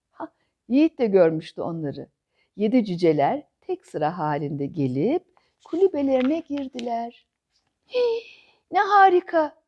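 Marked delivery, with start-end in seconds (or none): 7.9-9.5 high, loud shriek of pure delight. Cemre, seeing the seven dwarfs, screams with delight. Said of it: "diye çığlık attı Cemre".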